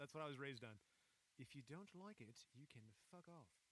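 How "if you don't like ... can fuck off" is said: bad, cartoonish, put-on British accent. Speaker showing off their british accent in conversation: bad british accent. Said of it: "It sounds like a bad Simpsons character".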